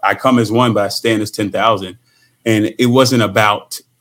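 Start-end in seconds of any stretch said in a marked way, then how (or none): none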